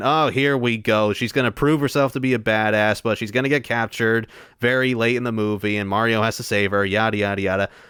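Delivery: ordinary delivery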